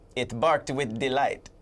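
put-on Jamaican accent. Telling a joke about a jamaican dog: put-on jamaican accent. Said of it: "Why the accent?".

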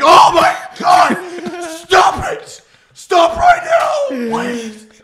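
high, slow, panicked pleading shout. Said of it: "He'd be like".

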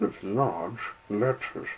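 plain reading voice

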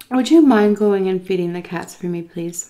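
put-on sugary, syrupy, really sweet voice. Retelling what a woman said to the speaker, in a mock really sweet voice. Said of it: "Really, really sweet voice".

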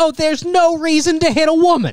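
very high put-on voice. Retelling a fight with a woman, imagining the comment in Bill Burr voice. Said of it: "hearing in Bill Burr's voice like".

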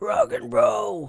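bad put-on rock-star voice, very high-pitched. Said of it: "That was a terrible impersonation".

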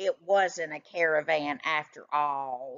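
ordinary talk

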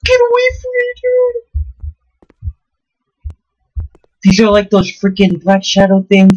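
very high, swooping, panicked, terrified voice. Playing a horror game as shadow creatures appear, terrified. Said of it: "I'm literally shaking".

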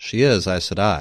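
wry, deadpan. Nynaeve answering the queen's question, said dryly. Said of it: "Nynaeve said dryly".

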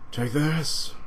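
anime warrior character voice, high. Describing an anime training scene, the speaker does a Vegeta voice. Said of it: "that's my best Vegeta voice".

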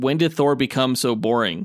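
normal talking voice

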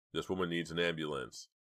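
plain

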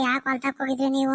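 ordinary delivery, nothing marked

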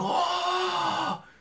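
very high, freaked-out yelp. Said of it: "freaking out".

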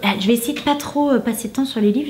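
rapid, hurried, nonstop delivery. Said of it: "je crois que je parle vite".

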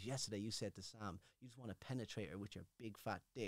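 put-on monotone voice. Recounting what the jury said to him, imitating a flat monotone. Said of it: "and they have that monotone voice".

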